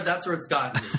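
plain

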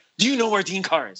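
mock, high, frantic, panicked voice. Retelling a phone call from someone looking for dean carr, imitating a frantic caller. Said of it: "it's this frantic voice on the other side".

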